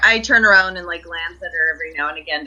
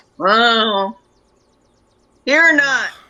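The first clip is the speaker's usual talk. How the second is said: put-on drunk voice, higher pitch; 6 semitones higher, 4 dB louder than usual. A character asked if they're drunk answers, acting drunk. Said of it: "trying to sound like I'm drunk".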